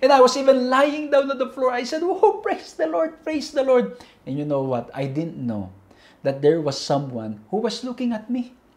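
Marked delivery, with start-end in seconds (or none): 2.0-4.0 play-acted high, joyful, exultant shout at full voice. Retelling hearing of a free trip to Israel: retelling a joyful shout. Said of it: "shouting at the top of my voice".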